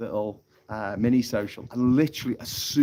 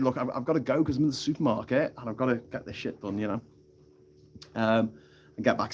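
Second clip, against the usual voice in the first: normal talking voice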